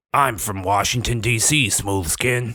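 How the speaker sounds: put-on ghoul voice. Showing off voices for the game: West Coast ghoul voice. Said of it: "let me get, West Coast ghoul".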